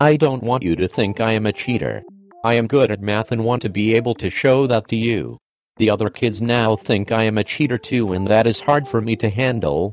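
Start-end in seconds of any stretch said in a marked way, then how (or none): none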